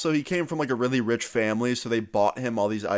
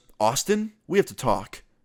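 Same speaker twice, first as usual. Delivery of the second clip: acted-out angry, serious delivery, slow; 3 semitones higher than usual. Retelling how a classmate sat down at lunch: imitating someone angry. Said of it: "all angry".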